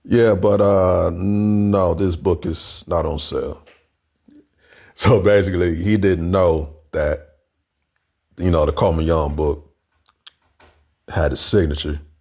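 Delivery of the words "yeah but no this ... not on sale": put-on unhurried Jamaican accent with a drawn-out "no". Retelling what a book seller said about the book: imitating a Jamaican accent. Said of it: "this Jamaican accent".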